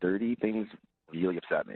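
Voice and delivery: creepy, eerie delivery. Explaining a dislike of dirt to the others: creepy delivery. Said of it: "it sounded super creepy the way you said that".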